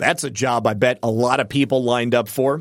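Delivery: ordinary delivery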